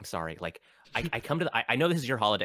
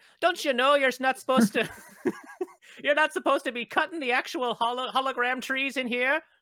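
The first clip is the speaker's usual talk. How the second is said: put-on Canadian accent, high pitch; 4 dB louder than usual. Role-playing a character who changes accent every line: Canadian accent. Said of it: "I think I should be Canadian".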